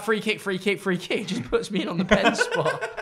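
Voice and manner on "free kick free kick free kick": urgent, put-on screaming repeated over and over. Retelling own screaming for a free kick: retelling a scream. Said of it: "I'm screaming".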